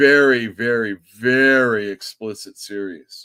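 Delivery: loud, drawn-out, dripping sarcasm on each "very". Describing a comic series while showing new books: sarcastic tone. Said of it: "the sarcasm in my voice".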